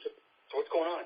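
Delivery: stage whisper with voice. Retelling how a promoter came back and spoke: imitating someone whispering. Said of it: "He whispers to me".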